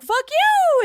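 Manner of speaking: very high, very loud, shrill shriek. Describing an audiobook to friends, imitating Stephen King with his voice going high. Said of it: "his voice just gets really high".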